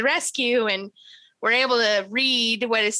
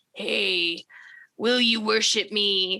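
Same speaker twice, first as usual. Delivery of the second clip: slow, eerie, crazy, disembodied voice; 2 semitones lower than usual. Retelling a game scene where a voice asks for worship: crazy disembodied voice. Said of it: "a crazy disembodied voice can be heard".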